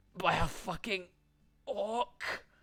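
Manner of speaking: slow, quiet mutter under the breath. Voicing a character run through by a sword, gurgling blood: muttering. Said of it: "you can hear him mutter".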